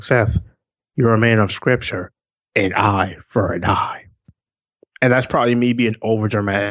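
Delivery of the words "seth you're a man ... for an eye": level, toneless, flat monotone drone. Retelling almost exactly how a man ended it on the line: imitating a monotone voice. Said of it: "it was just so monotone".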